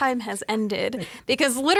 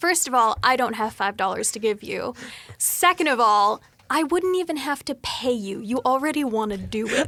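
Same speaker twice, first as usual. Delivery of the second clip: normal talking voice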